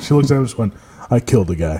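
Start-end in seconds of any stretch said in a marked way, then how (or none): 1.1-1.8 very low, dead-flat deadpan voice. Retelling what she told the pierced-up guy: imitating a deadpan confession. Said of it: "she can say it with a straight face".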